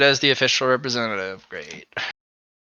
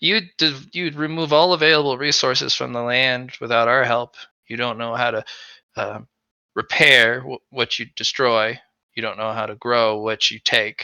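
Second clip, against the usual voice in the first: normal talking voice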